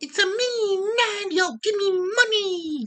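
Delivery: high, drawn-out squeaking voice. Joking that a game company has Mario dressed as a mafia guy: bad Mario impersonation. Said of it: "that was a really bad Mario impersonation".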